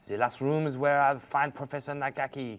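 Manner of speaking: put-on French accent, French character voice. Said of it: "Is this one of the French ones?".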